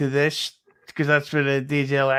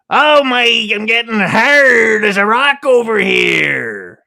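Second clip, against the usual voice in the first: put-on very loud, high, drawn-out Chicago accent; 8 semitones higher, 10 dB louder than usual. Showing the impressions he can do, the speaker plays a Chicago guy: Chicago accent. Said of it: "a Chicago guy talking about".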